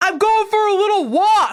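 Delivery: shouted, as if calling across a distance. Retelling how the president shouted back to the press below, retelling a shout. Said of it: "And then he shouts back".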